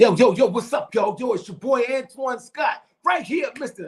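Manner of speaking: put-on New York accent. A comedian introduces himself when asked about himself, fake New York accent. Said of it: "I was getting my fake New York joint on".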